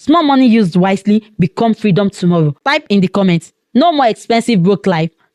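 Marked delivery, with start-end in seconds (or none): none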